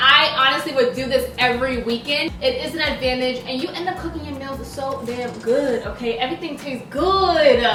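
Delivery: ordinary talk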